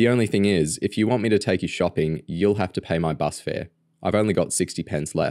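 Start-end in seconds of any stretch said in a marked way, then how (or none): none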